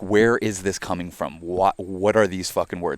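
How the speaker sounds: normal talking voice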